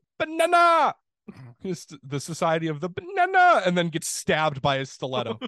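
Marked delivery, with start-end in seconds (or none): 0.2-3.6 squeaky, loud, bouncy, swooping little cartoon henchman voice. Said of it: "Picture that in Minion's voice".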